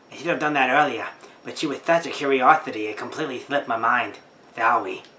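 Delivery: put-on female character voice. Voicing a female detective character reading game dialogue: put-on voice for a woman character. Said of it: "she was attractive until you started giving her that voice".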